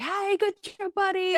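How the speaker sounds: very high-pitched, hyped-up, excited voice. Explaining dog training, showing the wrong way to praise a dog: excited dog praise. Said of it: "praising your dog in that level".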